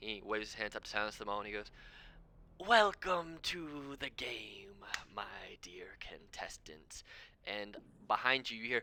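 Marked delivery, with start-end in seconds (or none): 2.6-7.0 very slow, drawn-out serpent, snake creature voice. Voicing a snake-like creature greeting the contestants: snake creature voice. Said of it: "a very large snake-looking creature who kinda waves his hands".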